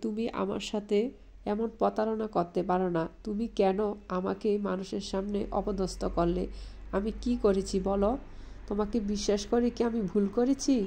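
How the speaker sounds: plain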